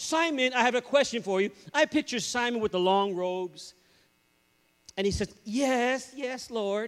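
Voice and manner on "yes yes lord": flamboyant, showy, hammed-up voice. Picturing Simon answering when he is questioned: flamboyant Simon voice. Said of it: "Real kind of flamboyant".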